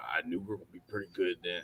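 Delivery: deep, hushed, very soft voice. Retelling what the coach said about the team, imitating the coach's deep voice. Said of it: "I can't do a very good imitation of his voice".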